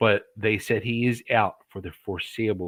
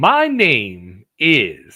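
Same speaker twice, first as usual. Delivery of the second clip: boxing-ring announcer style, louder; 9 dB louder than usual. Told to read the line as if announcing from the ring, like a ring announcer. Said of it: "do it like you're doing it from the ring".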